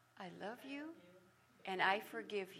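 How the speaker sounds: sultry, alluring tone. Retelling a line said to the husband: sultry voice. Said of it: "with an arched eyebrow and a sultry voice".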